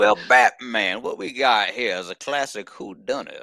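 loud, laid-on, put-on Southern drawl. Imagining Daniel Craig as Deathstroke addressing Batman, in a Benoit Blanc accent. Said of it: "can he do the Benoit Blanc accent?".

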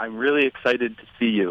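ordinary talk, nothing marked

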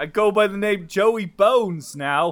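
put-on, slow New Jersey accent. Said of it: "I heard your perfect Jersey accent".

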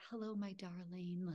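put-on grandmotherly older grandma voice with old-lady energy. Describing a glowing older figure named Pearl who greets the speaker, in Pearl's older grandma voice. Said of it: "like just very like older grandma energy".

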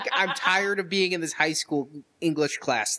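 ordinary talk

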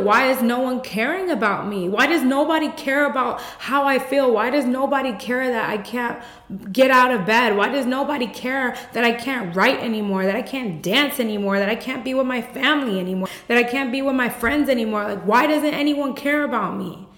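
put-on weepy, tearful, crying, pleading voice. Retelling what they told the doctor: retelling a tearful plea, put on. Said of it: "And I was just crying".

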